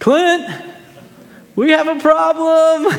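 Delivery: high, projected calling-out voice. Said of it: "I hear her call down".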